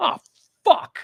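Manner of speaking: startled, genuine, high shocked blurt. Retelling reading a text in front of a friend, retelling a shocked outburst. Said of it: "that was my honest to god reaction".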